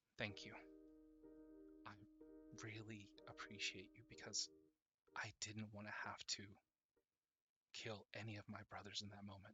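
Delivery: very soft, hushed whisper, very close in. Retelling what a woman whispered in his ear during an embrace, whispering. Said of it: "she whispers in your ear".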